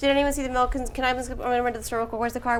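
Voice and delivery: quick, hushed mumble, rushed, words run together. Showing how they talk at home, not teaching, with fast, mumbled speech. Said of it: "I talk really, really fast, and I, I, I mumble all my words".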